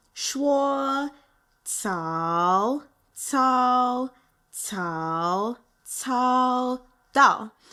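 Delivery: slowed down. Teaching viewers a little mandarin lesson so they can repeat it, slowed down. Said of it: "then I'll slow it down".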